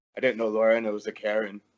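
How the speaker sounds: low, soft mutter under the breath. Voicing a character remarking on another: muttering under his breath. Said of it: "under his breath".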